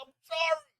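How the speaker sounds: play-acted high blubbering sobbing voice. Retelling how a man hanging off a porch begged: imitating someone crying. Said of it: "And the dude's fucking crying".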